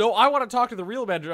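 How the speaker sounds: high, loud, fast, demanding voice.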